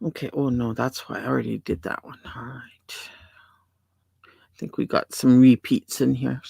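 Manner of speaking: low, soft muttering under the breath. Sorting items on screen while others chat, mumbling to oneself. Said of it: "I'm mumbling to myself".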